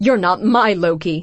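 words spat out angrily. Reading a story aloud, a furious character confronts another, spitting the words out angrily. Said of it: "she spits out".

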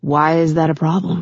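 plain reading voice

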